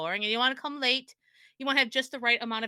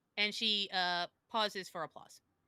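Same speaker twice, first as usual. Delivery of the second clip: ordinary delivery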